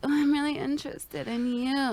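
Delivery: unsettling voice. Showing how not to say the line when asked what voice: creepy. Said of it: "Creepy as fuck".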